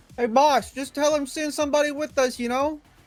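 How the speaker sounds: put-on terrible, botched Italian-American accent, very high-pitched. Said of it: "that's the worst accent you've ever done".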